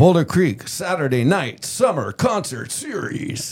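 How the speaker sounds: high-pitched monster truck promo announcer voice. Announcing the Boulder Creek summer concert series, in monster truck voice. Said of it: "you got a good voice for that".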